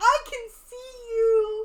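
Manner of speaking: high, slow, loud taunting delivery. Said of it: "he's like".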